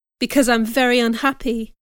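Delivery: plain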